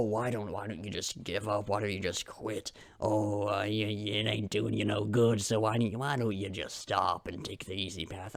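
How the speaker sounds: deep, hushed, low voice. Acting out the voice that tells the speaker to quit: deep voice. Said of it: "I don't know why my voice went so deep there".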